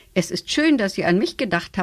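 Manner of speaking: plain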